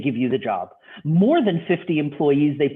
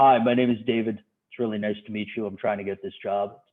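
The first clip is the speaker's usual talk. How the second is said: voice pushed down a register, deep and lowered; 6 semitones lower, 4 dB quieter than usual. Speaker demonstrates how men on phone interviews lower their voice, lowered voice. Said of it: "lower their voice a register".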